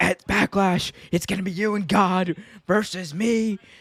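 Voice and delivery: hyped wrestling promo announcer delivery. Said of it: "he was like".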